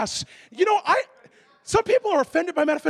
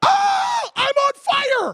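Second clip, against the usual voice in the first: very slow, stretched-out, high, drawn-out scream; 8 semitones higher, 3 dB louder than usual. Retelling how a man woke up and cried out: imitating a scream. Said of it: "he screams".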